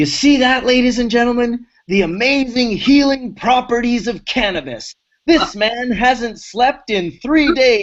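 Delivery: mock yelling. Retelling how a friend yelled to a quiet room: imitating someone yelling. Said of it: "he yells".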